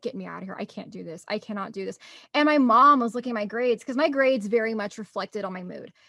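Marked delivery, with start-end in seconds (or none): 0.0-2.0 very soft, low, tearful pleading voice. Recalling coming home from school every day, retelling bawling in tears. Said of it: "just in tears, bawling".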